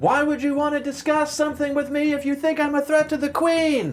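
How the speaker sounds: shrill, very loud, high-pitched shout. Replying in character so all guards in earshot can hear: very loud. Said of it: "I reply very loudly so that all of the guards and everyone in earshot can hear".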